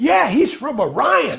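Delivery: eager, high, excited tone. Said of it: "all excited".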